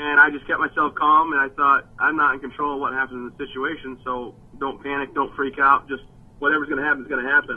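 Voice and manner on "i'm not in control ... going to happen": plain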